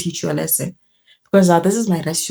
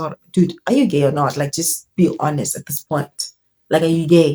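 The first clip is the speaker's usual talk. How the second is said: ordinary delivery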